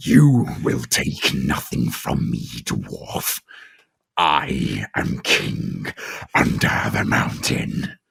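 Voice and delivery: terrifying, very low, very slow, drawn-out menacing voice. Recalling a film scene, quoting a character's line in a very low voice. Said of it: "it was so low as well".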